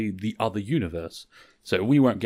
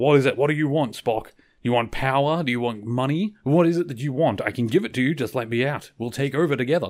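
put-on, mild, light, half-voiced yell; 4 semitones higher than usual. Recounting a scene, the speaker acts out one character yelling at another, retelling a yell. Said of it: "Kirk is yelling out".

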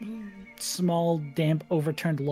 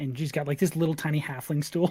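usual speaking voice

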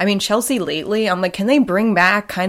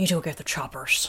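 put-on actress voice, hissing S sounds, lower, quieter; 3 semitones lower, 9 dB quieter than usual. Imitating an actress saying a line from a show: Jodie Foster voice. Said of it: "that's a pretty good Jodie Foster".

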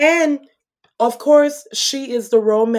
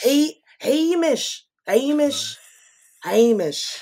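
put-on poor Scottish accent, higher pitch. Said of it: "we tried to do the Scottish accent".

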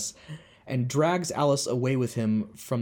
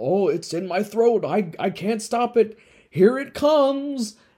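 very high, drawn-out, rising theatrical crescendo, acted; 9 semitones higher, 6 dB louder than usual. Retelling a man's act of feeling a scream coming on: imitating a theatrical build-up. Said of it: "it gets up to his throat".

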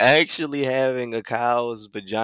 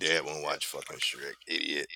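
low, soft muttering. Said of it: "and I was like".

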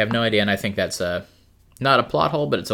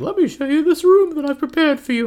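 very high, loud, piping character voice; 5 dB louder than usual. Storyteller recounting a scene from their game, doing a Lucy impression. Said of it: "That's my Lucy impression".

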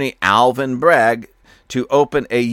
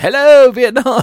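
very high, loud, belted DJ-style voice; 12 semitones higher, 7 dB louder than usual. Imagining a comedian on stage mimicking the news: Robin Williams impression. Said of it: "I could see Robin Williams on the stage mimicking this".

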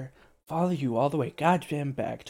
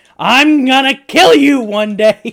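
acted, very high, very loud furious scream; 11 semitones higher, 16 dB louder than usual. Telling a story about a fuming man, acting out his furious threat. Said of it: "He is fucking fuming at this point".

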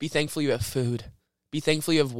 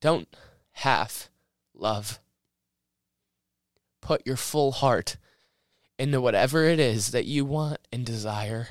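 choked-up voice breaking and catching with emotion. Speaker talks to his listeners, choked up. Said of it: "Sorry, guys, for getting choked up".

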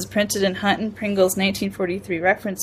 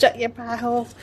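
rude, dismissive put-on Boston accent; 3 semitones higher than usual. Speaker imagines a woman saying the phrase, imitating her Boston accent. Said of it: "her Boston accent that she gets sometimes".

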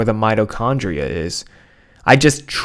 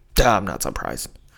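low grumbling mutter under the breath; 4 semitones lower, 5 dB quieter than usual. Showing how they'd react unsurprised, muttered under the breath. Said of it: "Just muttering it out".

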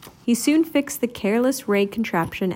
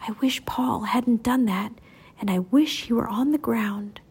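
whispering. Someone makes a wish to the wishbear, whispering.

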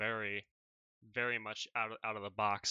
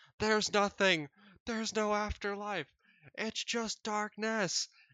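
very high, loud, shrieking cry; 11 semitones higher, 7 dB louder than usual. Retelling what a man screamed after coming back from flatlining, imitating a scream. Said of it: "he starts screaming".

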